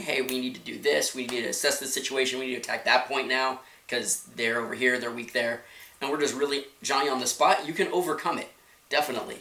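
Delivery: ordinary delivery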